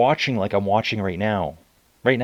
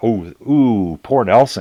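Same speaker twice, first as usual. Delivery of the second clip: very drawn-out, slow, sarcastic sympathy; 4 dB louder than usual. Imitating racing riders reacting as Nelson disappears: imitating sarcastic sympathy. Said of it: "I'm trying to be sarcastic here".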